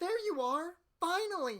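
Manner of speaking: high generic woman's voice. Voicing a female character who greets someone, generic high-pitched female voice. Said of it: "use a high pitched voice that sounds very generic".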